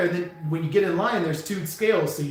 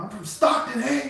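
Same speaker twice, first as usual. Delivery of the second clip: pitched-up, swaggering tough-guy hard-man voice; 6 semitones higher than usual. Retelling how a man who thought he was tough confronted him: imitating a tough guy. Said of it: "he thought he was so tough".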